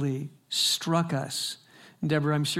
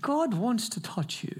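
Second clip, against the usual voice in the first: put-on South African accent, pitched up; 6 semitones higher than usual. Quoting a man who stopped mid-speech to address the speaker, in a south african accent. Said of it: "in his South African voice".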